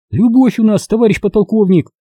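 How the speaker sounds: shrill, very high voice, almost a shout. The interpreter Dovgol speaks up to the lieutenant-colonel, almost shouting. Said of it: "почти крикнула Довголь".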